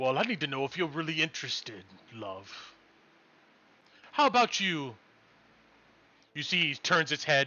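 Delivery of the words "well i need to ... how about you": coy, come-hither, seductive, flirtatious character voice. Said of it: "He goes".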